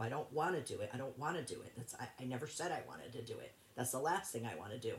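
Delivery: plain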